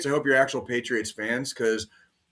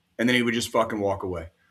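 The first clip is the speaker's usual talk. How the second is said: ordinary talk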